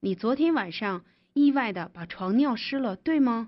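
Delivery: plain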